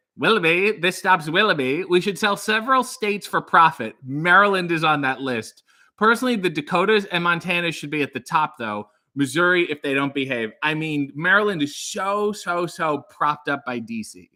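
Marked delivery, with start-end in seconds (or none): none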